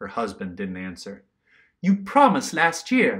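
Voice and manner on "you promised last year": high, loud cried-out exclamation. Nell reminds her husband Rob of his promise, exclaimed. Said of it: "exclaimed Nell".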